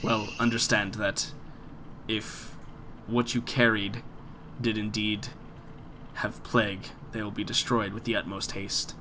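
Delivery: icy, aloof, cold and quiet delivery. Voicing the Count as he answers a player's request for the vials; cold, as the Count. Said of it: "So the Count, / he looks down again and he says, / Yeah, he's coming off very cold, / So the Count".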